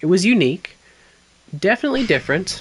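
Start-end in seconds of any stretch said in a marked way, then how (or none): 1.6-2.6 different stressed, high and fast. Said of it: "Emphasis on different".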